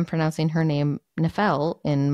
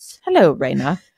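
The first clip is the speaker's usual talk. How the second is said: loud, prim, stiffly formal, very proper voice; 6 dB louder than usual. Imitating the audiobook's male character voice: imitating a very proper male voice. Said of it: "he was very proper".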